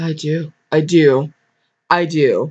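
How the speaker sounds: strong, forceful delivery spoken very slowly. Trying out a voice for the groom Mark: strong Mark voice. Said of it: "Strong, like Mark".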